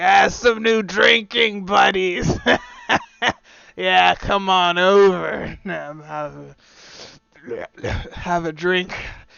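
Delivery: put-on sluggish drunk monster voice. Game master voices a drunk half orc at the bar addressing the players, sluggish drunk half-orc voice. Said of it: "slumped over drunk at the bar kind of sluggishly".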